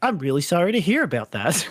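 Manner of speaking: sing-song AI assistant chatbot voice. Retelling a TV episode scene, doing a ChatGPT voice. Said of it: "a Chat G P T voice going like".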